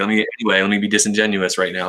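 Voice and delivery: ordinary talk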